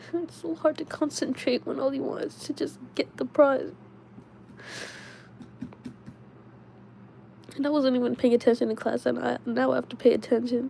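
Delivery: tearful, can't stop crying. Talking about studying and exams, crying. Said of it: "now I'm crying, but I can't stop crying".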